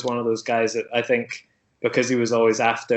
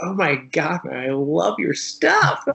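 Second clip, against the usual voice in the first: put-on gushing American accent, very slow, drawn out; 6 semitones higher than usual. Speaker acts out meeting someone whose work they love: American fanboy accent. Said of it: "Making it all American there".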